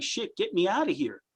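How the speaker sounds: frantic, cornered panic, desperate and pleading. Retelling a wrestler being handcuffed mid-match: imitating Roman Reigns panicking. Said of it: "he was literally panicking".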